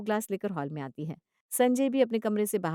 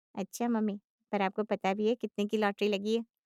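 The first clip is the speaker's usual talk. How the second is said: ordinary delivery, nothing marked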